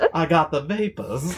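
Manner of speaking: high, soft, swooning Southern belle voice.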